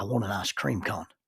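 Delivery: sly, conspiratorial, confiding aside. Retelling an old gentleman leaning over to ask for ice cream: imitating John's conspiratorial aside. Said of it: "he leans over conspiratorially and says".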